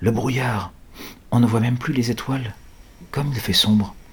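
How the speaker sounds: hushed murmur under the breath. Narrator reads Mick's remark to his companions, murmuring. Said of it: "murmure Mick".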